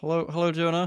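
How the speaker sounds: nervous. Greeting the other speaker at the start of a podcast episode: nervous. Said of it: "You sound very, very nervous".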